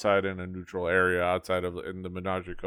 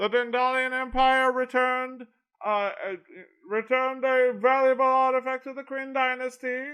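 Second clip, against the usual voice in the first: town crier announcing voice, higher pitch. Voicing a town crier walking in announcing news: town crier announcing. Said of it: "town crier walk in".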